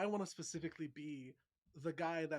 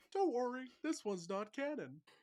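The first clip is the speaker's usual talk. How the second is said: pitched-up, squashed, compressed cartoon voice; 8 semitones higher than usual. Talking about a non-canon crossover, the speaker slips into an Uncle Grandpa voice. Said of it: "how good of an Uncle Grandpa voice I can do".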